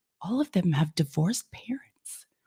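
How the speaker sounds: very quiet whisper, under the breath. Speaker retells what a girl said to them, retelling her whisper. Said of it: "And she like whispers it like".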